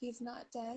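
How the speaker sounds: very quiet, hushed, said under the breath. Answering another speaker in a scene: said very quietly. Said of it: "I'll just say very quietly".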